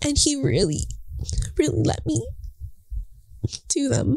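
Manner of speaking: crying while talking. Thanking God while reflecting on the past year, crying while talking. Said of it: "I don't even know I'm crying".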